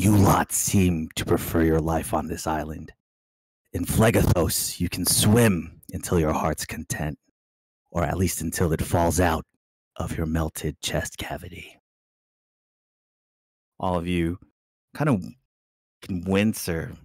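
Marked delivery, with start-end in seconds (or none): 0.0-11.8 hoarse, raspy voice with a whispery edge. The narrator voices a thing heard in the listeners' inner ear, raspy whispery voice. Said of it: "it's kind of raspy and whispery".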